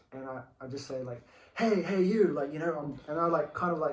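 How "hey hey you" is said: very loud, high-pitched hollering call-out. Retelling calling out to a girl on a hill: retelling a loud call-out. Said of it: "in a real loud voice".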